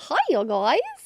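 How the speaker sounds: loud, belted cartoon character voice. A co-host opens the movie club episode greeting listeners, in a Goofy voice. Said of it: "Goofy, it sounds like".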